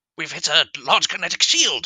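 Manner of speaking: shrill, high, loud shouted alien soldier voice. Recalling a line he voiced, the speaker does a Sontaran voice. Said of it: "got to get into the old Sontaran voice now".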